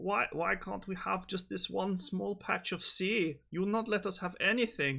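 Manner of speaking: put-on Austrian accent, very high-pitched throughout. The speaker voices the Germans complaining to them: Austrian accent impression. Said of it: "that's my impression of an Austrian accent".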